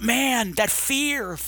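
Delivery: high, gushing, heartfelt delivery.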